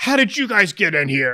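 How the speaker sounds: angry half-orc brute voice, fired off fast. Voicing a half-orc who gets back up, yelling. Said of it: "you hear him just yelling".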